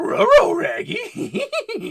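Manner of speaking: loud, each word begun with an r sound. Comparing the voices, doing a Scooby-Doo voice. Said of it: "I could do Scooby".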